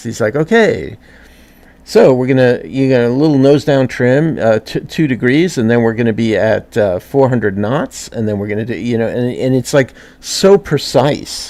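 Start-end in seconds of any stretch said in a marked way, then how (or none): none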